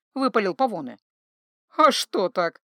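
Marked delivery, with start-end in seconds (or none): 1.8-2.5 mocking, sneering tone. An elf answering a man who wants a wedding stopped; mocking. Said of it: "насмешливо сказал эльф".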